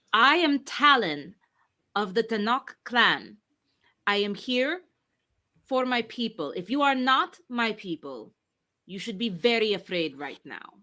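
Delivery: booming, very loud, high-pitched voice. A game player speaks as her character to her group and the room: very loud declaration. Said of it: "she's going to say very loudly".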